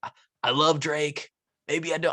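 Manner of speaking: slow-witted beer drinker voice. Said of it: "I don't know why I'm doing that voice".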